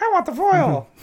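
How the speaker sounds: very high, silly put-on head voice. Retelling own thought about buying a card: put-on inner voice. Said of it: "and that voice".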